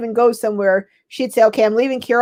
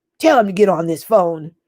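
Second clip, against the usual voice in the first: deep woman's voice, dropped low; 4 semitones lower than usual. Retelling a phone call, imitating an aunt's deep voice. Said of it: "she had a deep voice".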